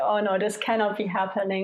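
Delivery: plain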